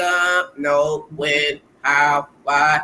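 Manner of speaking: low, flat, expressionless monotone, very slow and drawn out. Imitating a husband who hides his personality: imitating daddy's monotone voice. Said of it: "'cause he acts very monotone".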